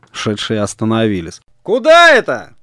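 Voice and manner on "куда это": very high, loud shout. Nikolai calls out again to two people walking on the road: shouted. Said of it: "опять крикнул Николай".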